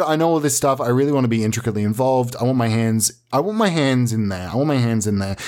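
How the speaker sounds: normal talking voice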